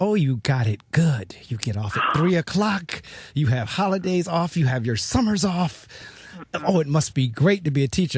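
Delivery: mock, good-natured teasing, ribbing tone. Retelling how people tease teachers about their job: imitating people teasing. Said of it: "we constantly get teased by people like".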